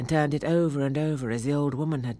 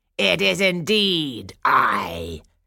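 wicked fairy cackle, slow, loud, very drawn out; 6 dB louder than usual. Narrator voicing the wicked fairy answering the king, cackling. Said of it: "cackled the wicked fairy".

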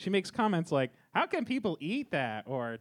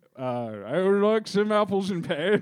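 stuffy put-on upper-class British accent, much higher; 4 semitones higher, 8 dB louder than usual. Asked to say something a British person would say, in a stuffy upper-class British accent. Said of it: "Say something a British person would say".

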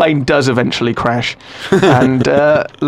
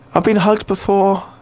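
put-on, high woman's voice; 5 semitones higher than usual. Voicing a bald woman with a moustache on a crashing plane: bald woman's voice. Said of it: "That's her voice, that's what she sounds like".

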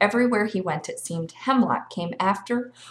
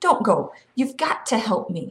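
usual speaking voice

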